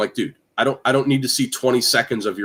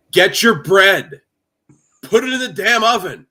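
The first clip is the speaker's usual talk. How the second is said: very high, aggressive, barking yell; 9 semitones higher, 6 dB louder than usual. Imitating a TikTok cooking creator who curses and yells: imitating an aggressive yell. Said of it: "he yells at you like he's aggressive".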